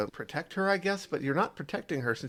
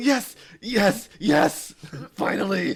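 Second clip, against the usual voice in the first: very loud, very slow, drawn-out relieved cheer; 8 semitones higher, 8 dB louder than usual. Retelling standing up while watching Art sneak around, retelling relieved cheering. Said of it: "I was so relieved".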